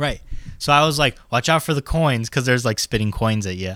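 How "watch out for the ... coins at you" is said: plain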